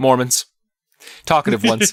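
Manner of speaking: put-on deadpan, bone-dry, no audible reaction. Retelling a character's short reply to a question: imitating a deadpan line. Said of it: "Dead, deadpan".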